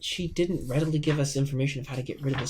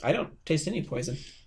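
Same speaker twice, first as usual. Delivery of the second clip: ordinary delivery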